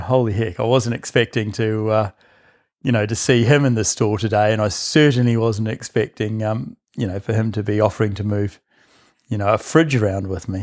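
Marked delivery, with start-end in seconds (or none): none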